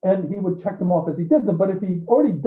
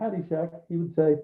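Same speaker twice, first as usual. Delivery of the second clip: usual speaking voice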